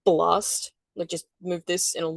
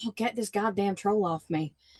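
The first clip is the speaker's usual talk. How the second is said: normal talking voice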